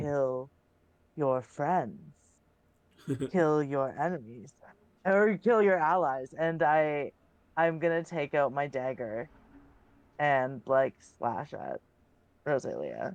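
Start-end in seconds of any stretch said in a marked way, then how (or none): 0.0-6.3 creepy, possessed-sounding voice. A player's character turns on a companion in the game, creepy Shadow King voice. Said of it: "like creepy, like it's almost like the Shadow King voice is like coming through me".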